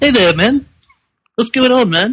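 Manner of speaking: put-on very high-pitched little boy voice. Describing a man expected to sound serious, then quoting him: man talking like a little boy. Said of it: "he talks like a like a little boy".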